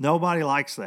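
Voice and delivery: ordinary talk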